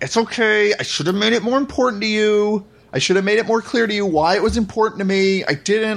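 through gritted teeth. Speaker retelling a movie scene after the hotel room wreck, as Butch through gritted teeth. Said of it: "through like fucking gritted teeth".

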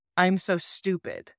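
ordinary talk, nothing marked

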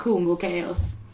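totally unperturbed, calm delivery. Reacting in character to a shadow figure appearing: unperturbed.

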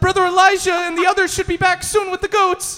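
very high, loud, terrified, frightened voice. Narrating a game scene, voicing a chosen soldier who answers back, very frightened. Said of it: "a very frightened chosen soldier goes".

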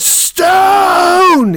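high, loud scream. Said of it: "Chad screaming".

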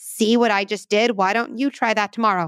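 ordinary talk

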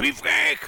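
very high-pitched, loud, cartoonish shout. Telling Thomas he should have read the question this way: Cartman voice. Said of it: "you needed to read that question in a Cartman voice".

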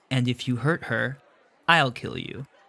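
slow, hushed half-whisper, close up. Pulling the listener a little closer and half-whispering into their ear. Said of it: "whispers into your ear".

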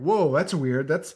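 ordinary talk

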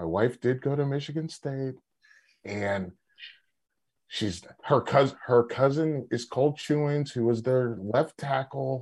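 hushed low voice. Speaking about his wife, in a lowered voice. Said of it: "gonna have to lower my voice".

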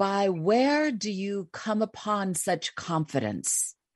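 slow, theatrical Shakespearean stage delivery. Retelling what the speaker said to him, in a Shakespearean tone. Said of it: "I said to him in like a Shakespearean tone".

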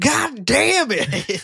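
mock shrill, loud country holler, pitched way up. Retelling a scene where Michael yells: imitating Michael's country yell. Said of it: "the greatest fucking most countryest "God damn it"".

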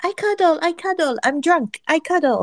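squeaky, very high-pitched put-on character voice. Reading out a quote from Max in a high-pitched put-on voice. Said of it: "in a high-pitched Lily voice".

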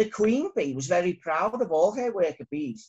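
ordinary delivery

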